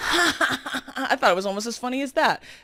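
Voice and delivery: mock, high, self-amused laugh into the words. Retelling a man's remark in a story, imitating him laughing at his own joke. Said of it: "Starts laughing at his own joke".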